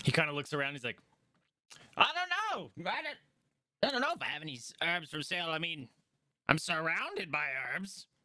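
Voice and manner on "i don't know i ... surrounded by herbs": high, swooping fantasy gnome character voice. Voicing a gnome herbalist greeting a player: gnome voice. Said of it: "obviously a gnome".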